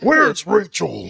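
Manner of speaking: loud, rough, gravelly, raspy hero voice. On the podcast, a host asked about a voice does his Batman voice. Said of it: "this is the Batman [name] voice".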